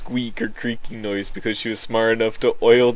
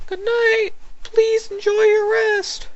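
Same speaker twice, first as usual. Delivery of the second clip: put-on character voice, much higher, slower. Narrating how a nurse locks your items away, saying goodnight in a Nurse Joy voice. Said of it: "a voice for Nurse Joy".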